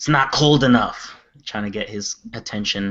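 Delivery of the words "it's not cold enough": high shout, calling out. A player's character yells out, trying to get his attention: yelling out. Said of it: "And I yell out".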